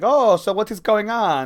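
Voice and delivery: put-on vague German or Austrian accent. Retelling a scene from episode four, imitating Zemo's German-like accent. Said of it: "I don't know what accent he has".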